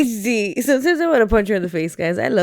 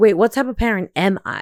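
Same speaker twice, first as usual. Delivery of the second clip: ordinary delivery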